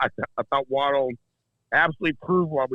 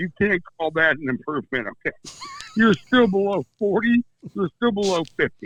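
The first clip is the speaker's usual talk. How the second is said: higher-pitched talking through giggles and laughter; 6 semitones higher than usual. Disputing the other speaker's claim of improvement, laughing while talking. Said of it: "I'm sorry I'm laughing".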